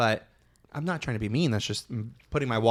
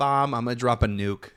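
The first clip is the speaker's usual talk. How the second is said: put-on New York accent. Friends quoting a Housewives line, in a New York accent. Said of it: "I only say it in a New York accent".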